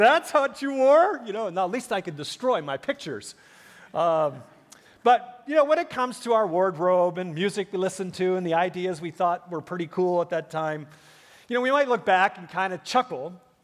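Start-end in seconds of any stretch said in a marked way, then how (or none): 0.0-1.2 put-on slow, high, louder, incredulous kid voice. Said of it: "your kids ... are gonna look at you".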